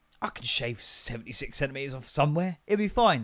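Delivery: breezy, careless, cavalier, offhand self-assurance. Retelling what they said to themselves after measuring for a cable: imitating own cavalier tone. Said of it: "in a cavalier fashion".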